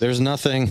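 anxious, uneasy, nervous, high-pitched voice. Acting out her answer about what she's stubborn about: imitating a nervous voice. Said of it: "It's like in a nervous voice".

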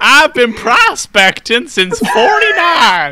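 put-on very loud, very high old-man voice. After putting on boots and a hat, the speaker slips into an elderly man voice. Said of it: "you just sound like an elderly man".

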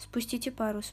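ordinary delivery, nothing marked

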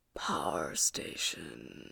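hushed, hissed, barely audible whisper. Narrator reads a man's line in a story, hissed and barely audible. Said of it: "he hissed, his voice barely audible".

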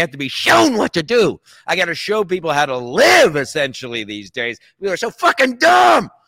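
furious, loud, swooping, angry yelling rant. Ranting to the other speaker about other drivers, screaming. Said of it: "That's the voice. That's the scream".

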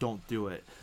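play-acted, firm, stern parental-sounding tone. Retelling how his wife warned their daughter at dinner: imitating a stern warning. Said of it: "she looks at her real sternly".

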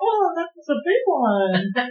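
put-on syrupy, sugary, very high girly sing-song voice. Retelling her reply to the man across from her, sugary pumpkin spice girl voice.

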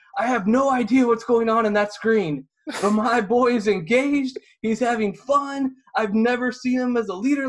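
jacked-up yelling, very loud, high and shrill. Retelling a parent's answer at an esports match: imitating a dad shouting excitedly. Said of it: "still shouting for some reason".

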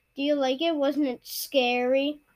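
usual speaking voice

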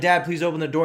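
ordinary talk

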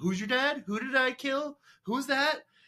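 mock, very high, jeering schoolyard taunting voice. Retelling how Askeladd taunts Thorfinn in their duel: imitating Askeladd mocking. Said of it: "basically making fun of him".

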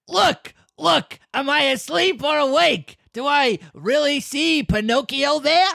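slow, rough, high-pitched cry. Reading a puppet character's line as asked, yelling wildly: Krusty the Clown voice. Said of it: "You make him sound like Krusty the Clown".

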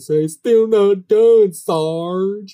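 loud, high, hammed-up Southern bumpkin, Sarge drawn out. Retelling a TV show scene, doing a hammed-up Gomer Pyle voice. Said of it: "he extra hams up his Gomer Pyle".

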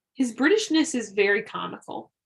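usual speaking voice

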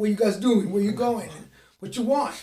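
put-on fast New York accent. Retelling how the door guy at your Midtown stay talked: New York accent. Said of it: "he had one of those New York accents".

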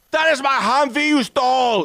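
put-on wildly over-the-top German accent, very high and loud. Retelling a movie line by a German Humvee owner: crazy German accent. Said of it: "the most crazy German accent ever".

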